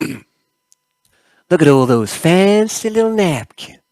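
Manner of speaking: slow, swooping put-on Southern US drawl. Storyteller voices the doctor in the scene, in an attempted Southern accent. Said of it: "I'm just going to get into my accent".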